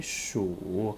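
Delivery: shu sunk very low, third tone. Chinese lesson, reading words aloud: very low third tone on shu. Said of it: "Remember the third tone, it's very low".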